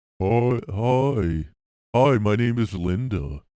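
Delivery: loud, slow put-on woman's voice, "hi" stretched out. Acting out a date introducing herself: put-on low woman's voice. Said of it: "It wouldn't be this low".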